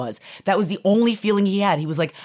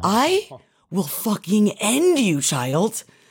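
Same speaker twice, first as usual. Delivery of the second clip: mock seeing-red rage, furious outburst; 2 semitones higher than usual. Retelling how Matt reacted after a child threatened to spit on him, imitating Matt's furious rage. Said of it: "Matt saw red and was like".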